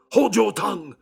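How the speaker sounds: very high, shrill, loud, ferocious, savage delivery. Narrator reading Poole silencing the weeping maid, fierce. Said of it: "with a ferocity of accent".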